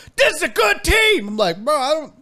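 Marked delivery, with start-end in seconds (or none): 0.2-1.3 mock very high, loud, angry shriek. Retelling a man screaming at him from his car, imitating someone screaming. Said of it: "He's in his car screaming at me".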